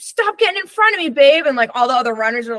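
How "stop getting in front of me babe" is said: very high, raised, loud yelling shout. Retelling yelling at him when he got ahead during a run; retelling their own yell. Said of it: "he got ahead of me and I yelled".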